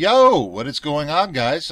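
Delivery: small, squeaky little voice. A host greeting viewers at the start of a video, squeaky voice. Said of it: "I had a little squeaky voice there".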